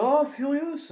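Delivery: loud, high calling out.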